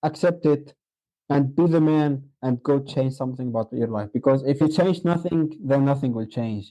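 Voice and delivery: ordinary talk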